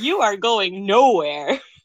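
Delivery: forceful, loud voice. Retelling how Hijikata punches Enomoto and refuses: imitating Hijikata's forceful line. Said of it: "Hijikata just straight up punches him".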